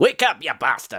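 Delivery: rousing, wake-up-style Scottish accent. A viewer wants the scottish voice as a wake-up alarm: scottish accent. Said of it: "he needs that Scottish voice as an alarm".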